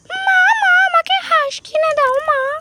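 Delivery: put-on high, loud, childlike begging voice.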